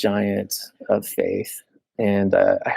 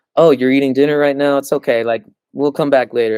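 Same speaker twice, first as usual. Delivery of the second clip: very polite, mock courteous, considerate manner; 5 semitones higher, 4 dB louder than usual. Retelling how a companion spoke when contacting people: imitating Jared being polite. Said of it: "Jared was more polite, like".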